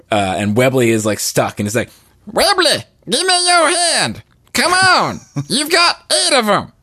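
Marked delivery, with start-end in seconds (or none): 2.2-6.6 very high cartoon voice swooping and swinging around. Quoting a cliffhanger scene from a cartoon: Bobby voice. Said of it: "I can do a decent impression of Bobby from Bobby's World".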